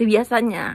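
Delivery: ordinary delivery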